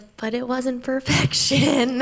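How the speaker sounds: sobbing, half-laughing voice. Retelling her reaction on being told the score was hers: retelling sobbing while laughing. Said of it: "And I'm still sobbing, but I'm like kind of laughing".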